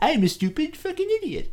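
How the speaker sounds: goofy put-on idiot voice. Describing a type of film role, doing a goofy Adam Sandler character voice. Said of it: "I would say character Sandler, which is like".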